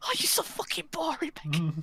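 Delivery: mock angry outburst. Speaker imitates how her brother snaps at someone, mimicking brother's angry outburst. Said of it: "Just gets so angry at her".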